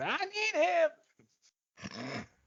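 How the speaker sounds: very shrill, very high yell with swooping pitch. Pitching Anakin yelling at Samuel L. Jackson: shrill Adam Sandler voice. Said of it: "Doing that really shrill Adam Sandler voice".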